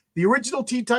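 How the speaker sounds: high voice cracking and breaking mid-line. Speaking to listeners mid-sentence, the speaker's voice cracking. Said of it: "Oh my god, my voice!".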